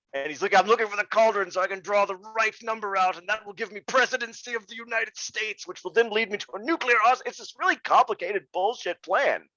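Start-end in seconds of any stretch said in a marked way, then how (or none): 0.5-7.3 villainous, scheming evil businessman voice. Summing up a character's scheme, doing his lines: evil businessman impression. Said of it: "he sounds like an evil businessman".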